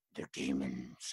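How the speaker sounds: deep grudging demon growl. Showing how a demon voice sounds: deep grudgy demon voice. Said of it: "It's just that deep, like, grudgy type voice".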